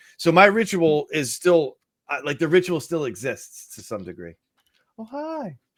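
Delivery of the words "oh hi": very high little puppy-like voice. Greeting a child who has just come in, sounding like a puppy. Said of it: "It sounded like a puppy hi".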